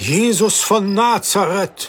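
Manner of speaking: amazed surprised cry. The merchant, spotting someone in the approaching crowd, exclaims: astonished exclamation. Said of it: "rief der Kaufmann erstaunt".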